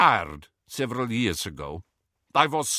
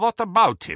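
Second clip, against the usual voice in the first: suspicious, wary, probing tone, pitched up; 8 semitones higher, 3 dB louder than usual. Crumb questions Harry; suspicious. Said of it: "asked Crumb suspiciously".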